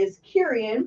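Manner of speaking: ordinary talk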